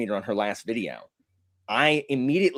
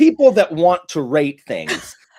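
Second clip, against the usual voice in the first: high-pitched, loud, dripping with contempt. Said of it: "the dripping contempt in her voice".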